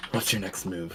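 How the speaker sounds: whispered voice. A player voicing Rook speaks to Horace in the game, in a quiet whisper. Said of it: "he will say in this very like quiet, whispered voice".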